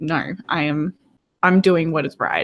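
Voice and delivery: ordinary talk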